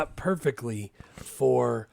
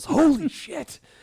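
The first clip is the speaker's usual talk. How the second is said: acted very high, shrill, startled, frightened scream; 6 dB louder than usual. Retelling a movie scene of walking in on someone: imitating a frightened yell. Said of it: "he gets frightened and he yells".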